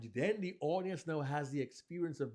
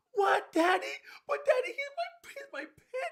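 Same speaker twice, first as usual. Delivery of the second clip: put-on very high, loud, distressed, upset young child voice; 9 dB louder than usual. Demonstrating voicing a little kid answering his dad's bad news, upset six-year-old kid voice. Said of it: "the voice is different for a six or eight year old kid".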